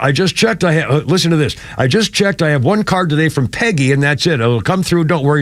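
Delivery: ordinary delivery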